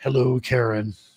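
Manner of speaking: on-air radio announcer voice. Greeting Karen, who has just said hey, using the radio voice. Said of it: "he gave you the radio voice".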